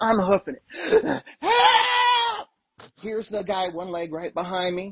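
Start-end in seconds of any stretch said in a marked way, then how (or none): 1.4-2.5 acted, very high, long, drawn-out panicked shriek. Speaker retells running from a man toward their bodyguard; retelling a scream for help. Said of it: "and I'm screaming".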